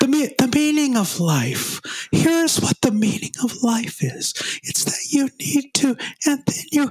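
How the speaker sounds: quiet, slightly high put-on voice. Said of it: "that's my Jack imitation".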